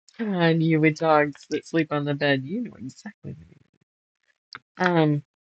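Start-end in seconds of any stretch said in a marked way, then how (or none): none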